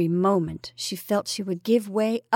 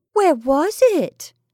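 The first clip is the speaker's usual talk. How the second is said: merry, playful tone, raised and high pitch; 8 semitones higher, 5 dB louder than usual. Over a card game with a man, a woman asks, gaily. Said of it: "she asked gaily".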